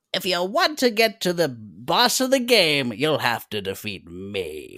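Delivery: loud, booming, swooping cartoon villain voice. Describing a skeletal mage in a game, doing a Skeletor impression. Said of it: "that's quite literally just Skeletor's voice actor".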